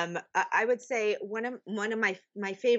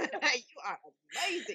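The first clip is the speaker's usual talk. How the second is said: put-on Australian accent, higher and quieter; 6 semitones higher, 4 dB quieter than usual. Quoting a video of Chris Hemsworth: imitating Chris Hemsworth's Australian accent. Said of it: "in his Australian accent".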